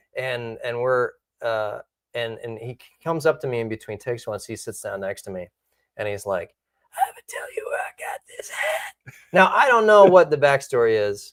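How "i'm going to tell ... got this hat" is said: breathy whisper, sounding like damaged vocal cords. Retelling what Nicolas Cage said between takes, in his damaged-vocal-cords voice. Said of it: "talks in this voice the whole time".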